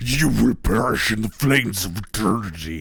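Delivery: put-on demonic devil voice. Showing how to wheel around on someone, speaker demonstrates a demonic devil voice. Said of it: "you just hit him with the devil voice".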